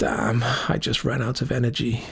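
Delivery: faint, weak, croaking voice. A wounded character, just recovering, speaks up to the others, croaking. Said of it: "he croaked".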